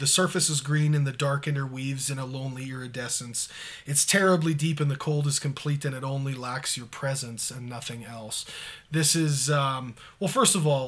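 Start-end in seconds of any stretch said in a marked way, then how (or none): none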